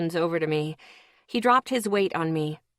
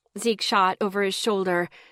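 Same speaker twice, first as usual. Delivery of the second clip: usual speaking voice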